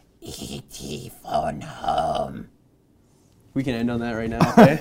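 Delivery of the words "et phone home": very quiet, hushed, little put-on voice. Speaker announces he has nailed an impression, then performs it: doing an announced impression. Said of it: "I'm going to do the impression".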